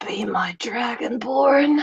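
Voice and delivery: softly whispered. Describing a camera close-up, the speaker voices her line, whispering. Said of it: "and she whispers".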